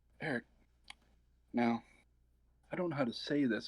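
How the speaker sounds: tiny, slight, small little voice. Retelling what the director Maria Polera said to him, imitating her little voice. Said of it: "in her little voice".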